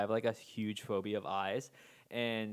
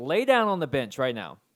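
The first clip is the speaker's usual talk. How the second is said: mock-aggressive, forceful, louder; 3 semitones higher, 10 dB louder than usual. Retelling how a friend ordered the speaker onto a bench, imitating an aggressive order. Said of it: "the most like aggressive".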